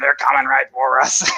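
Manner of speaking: put-on voice as if through a throat speaker. Likening a sudden voice to a character who holds a speaker to his throat, South Park throat-speaker guy voice. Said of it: "has to put the little speaker up to his throat".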